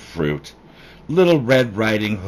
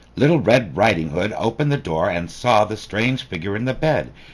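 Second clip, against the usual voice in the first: ordinary delivery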